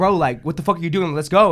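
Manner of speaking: imitated annoyed, mad-sounding tone. Retelling a friend urging them to leave: imitating someone sounding mad. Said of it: "you seem mad".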